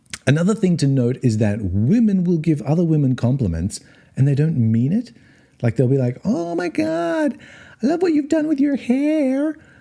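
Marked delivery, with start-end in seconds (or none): 6.2-9.5 very high, effusive, gushing woman's voice. Describing how women compliment other women, the speaker does a woman impersonation. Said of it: "That's my best woman impersonation".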